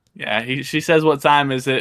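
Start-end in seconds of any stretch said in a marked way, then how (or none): 1.0-1.8 thin, squeaky little squeal. Retelling a wrestler's line to another speaker: imitating a high squeaky voice. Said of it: "in her high-ass squeaky voice".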